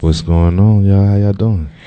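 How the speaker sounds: seductive, sultry, sexy voice. Greeting the listeners as a producer: sexy voice. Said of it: "why you all sounding all sexy and stuff".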